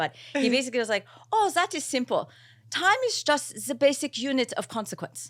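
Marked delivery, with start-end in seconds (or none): 1.3-5.3 bad, admittedly botched German accent, high-pitched. Retelling how a man explained time to him: botched german accent. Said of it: "I'm going to botch his German accent".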